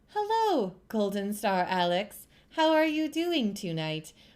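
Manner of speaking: robotic female voice. Greeting Golden Star Alex, as requested, in GLaDOS robot voice. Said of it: "I do not speak like a robot lady".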